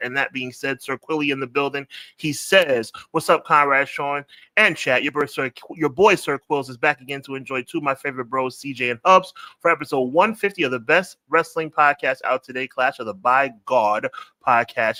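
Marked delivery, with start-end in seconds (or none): none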